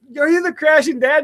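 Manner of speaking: acted, thrilled, high-pitched excited screaming. Retelling a subscriber at a bar calling out to his companion: retelling a scream. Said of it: "Like just screaming".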